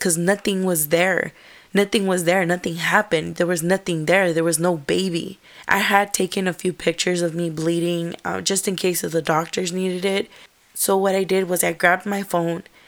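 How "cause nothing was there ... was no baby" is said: plain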